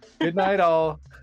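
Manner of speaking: loud yelling, calling out. Calling out to a departing customer as she opens the door: yelling out. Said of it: "I'm gonna yell out".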